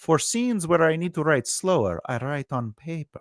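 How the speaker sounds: hammed-up vampire voice. Talking about how he writes slower scenes, in a put-on vampire voice. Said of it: "I did that in the vampire voice for you".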